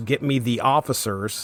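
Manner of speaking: ordinary talk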